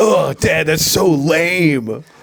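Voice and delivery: put-on teenage boy voice, "lame" pulled long. Joking about a son mocking his dad, doing a teenager impression. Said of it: "that's my teenager impression".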